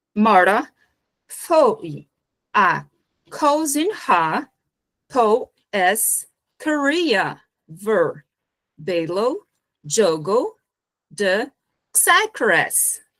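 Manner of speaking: very slow American accent in Portuguese. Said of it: "agora é um nativo americano e ele vai ler esse, esse panagrama aqui que está em português".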